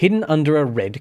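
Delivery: ordinary delivery, nothing marked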